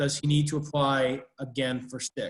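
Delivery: ordinary talk, nothing marked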